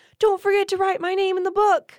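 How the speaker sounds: shrill, very high, really loud voice. Speaker retells a character's words, imitating someone speaking really loudly. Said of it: "Like really loud".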